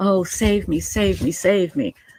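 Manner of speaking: scornful, sarcastic damsel-in-distress begging. Mocking how someone acts, put-on plea: mocking imitation of Lori pleading. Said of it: "this is her version of".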